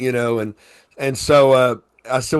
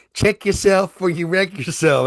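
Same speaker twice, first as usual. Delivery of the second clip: pitched-up cowgirl drawl; 6 semitones higher than usual. Imitating the other speaker's way of saying things: imitating a cowgirl accent. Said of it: "your cowgirl accent".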